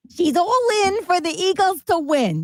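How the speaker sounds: put-on Brooklyn accent. Talking about watching the Eagles game, the speaker imitates their mother's Brooklyn accent. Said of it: "That's how my mother sounds".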